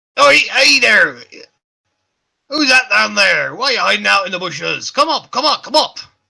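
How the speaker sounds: shrill, very loud, high call across a distance. Voicing a stranger at the top of stairs calling down to a hiding player: calling out from a distance. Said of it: "you hear a voice call out to you".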